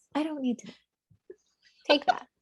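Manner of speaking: cute, sassy tone. Told to say it all cute with some sass, the speaker repeats it: cute and sassy. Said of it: "say it like that, all cute, with some sass".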